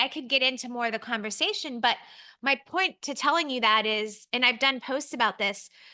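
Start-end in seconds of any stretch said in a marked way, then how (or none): none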